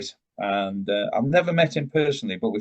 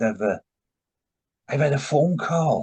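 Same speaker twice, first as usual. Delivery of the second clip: put-on South Welsh accent, pitched higher; 5 semitones higher than usual. Recalling when Steve came to tell the boys about a phone call: imitating Steve's South Welsh accent. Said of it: "in his South Walian accent".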